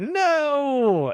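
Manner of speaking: despairing delivery.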